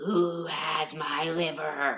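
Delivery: eerie, spooky ghost voice, very slow, drawn right out. Storyteller telling a ghost story, voicing the ghost, spooky ghost voice. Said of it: "I'm really enjoying the ghost voice".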